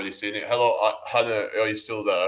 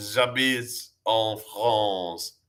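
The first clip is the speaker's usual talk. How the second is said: put-on fake French accent. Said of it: "I sound French, right?".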